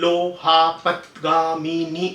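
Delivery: very slow, halting, broken-up syllable speech. Showing how halting cerebellar speech sounds: halting broken syllable speech. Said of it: "इस तरह से".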